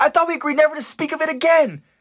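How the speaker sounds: very high-pitched, embarrassed shriek. Retelling a scene, acting out Petra's line: Petra screaming in embarrassment. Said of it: "an embarrassed Petra begin screaming at Elle".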